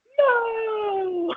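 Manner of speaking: no said very high and stretched out. Retelling the dubbed clip again, Slippy asks a question: imitating Slippy. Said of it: "then she's like".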